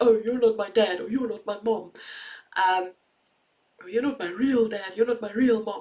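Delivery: silly, goofy put-on kid voice. A parent quotes a child's hurtful reaction; goofy voice quoting a child. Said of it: "I say it in such a goofy voice".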